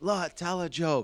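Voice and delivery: high-pitched, heckler-style scream. Retelling how a heckler in a quiet crowd screamed: imitating a heckler screaming. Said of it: "He kept screaming that on repeat".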